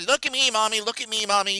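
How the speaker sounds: put-on small, high little-kid toddler voice. Describing a toddler in a store calling to their mom, imitating a toddler. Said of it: "a little toddler with their mom".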